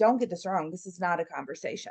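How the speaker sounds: usual speaking voice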